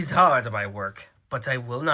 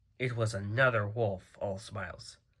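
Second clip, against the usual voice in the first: ordinary delivery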